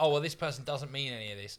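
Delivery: normal talking voice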